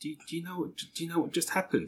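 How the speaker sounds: put-on whisper. Retelling what Sue whispered as the film finished: imitating Sue whispering. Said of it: "Sue whispered to me".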